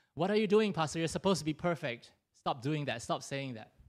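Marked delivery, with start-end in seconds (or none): none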